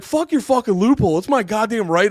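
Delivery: very loud, high-pitched, enraged, furious outburst. Retelling own past thought in a bit: imitating own angry reaction. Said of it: "let me do my fucking bit".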